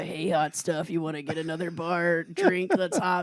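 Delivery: flirty come-on cougar voice. Joking about sounding like a cougar at a bar: put-on cougar voice. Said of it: "I sound like a cougar".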